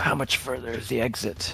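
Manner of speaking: slow, breathless, hushed half-whisper, words stretched. A character asks the store maiden how far the exit is, half-whispering. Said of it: "he'll kind of whisper to the store maiden".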